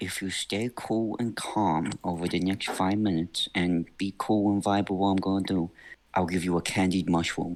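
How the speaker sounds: whispering really quietly. Whispering in character to a small rabbit held in the hands: whispering really quietly. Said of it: "I whisper to it really quietly".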